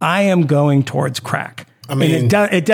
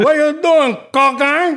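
bad put-on Cuban accent, pitched higher; 12 semitones higher than usual. Joking about doing cocaine like in Scarface: bad Al Pacino Cuban accent. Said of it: "in a bad Al Pacino Cuban accent".

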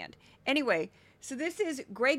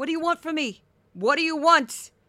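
loud, high-pitched put-on Brooklyn accent; 4 semitones higher, 8 dB louder than usual. Speaker from Missouri shows they can fake talking like they're from Brooklyn. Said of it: "I really from Missouri and I don't talk like this".

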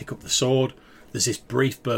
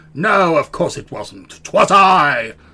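eerie, strange voice, high and very loud, booming; 5 semitones higher, 11 dB louder than usual. In a role-play scene, a character speaks in a voice not his own, strange voice. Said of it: "in this strange voice says".

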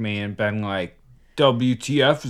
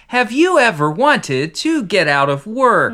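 very high, loud text-to-speech voice; 11 semitones higher, 6 dB louder than usual. Acting out a TikTok video's voiceover coming on: TikTok text-to-speech voice. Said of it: "The TikTok lady's voice comes on".

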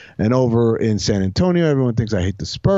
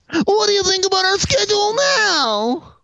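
very high put-on nerd voice, "now" drawn out. Asked to do the nerd voice about the Lakers, doing a nerd voice. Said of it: "your nerd voice about the Lakers?".

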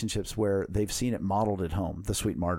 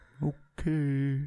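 put-on acted-out child voice, higher pitch; 6 semitones higher than usual. Acting out a poor child coming home to a father: voicing a hurt child. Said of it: "And Johnny's like".

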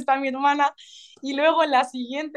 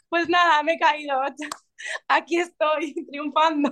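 mock movie-style triumphant cry, tossed off; 3 semitones higher than usual. Retelling falling in front of a packed arena, imitating her own past shout. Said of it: "pegar un grito como diciendo".

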